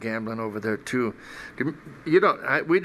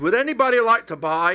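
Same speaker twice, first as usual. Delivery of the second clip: put-on high, raised, called-out Scottish accent; 10 semitones higher, 5 dB louder than usual. Quoting a stranger who lost all his money at poker, Scottish accent. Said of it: "it was a Scottish accent".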